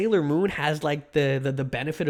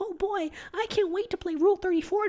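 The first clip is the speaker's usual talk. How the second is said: squeaky, very high, mocking, teasing put-on voice. Addressing Omo directly, imitating Omo's voice. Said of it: "that's your voice, by the way".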